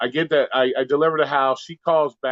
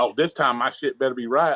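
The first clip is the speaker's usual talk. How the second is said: usual speaking voice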